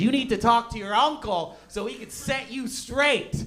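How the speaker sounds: mock upset outburst, pitched high. Retelling mom's reaction after catching him smoking: imitating mom flipping out. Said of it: "So she flipped out".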